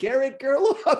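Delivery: put-on word pronounced with an Italian accent. Retelling a moment from a video: imitating Valentino Rossi's Italian accent. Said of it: "in his Italian accent when he said".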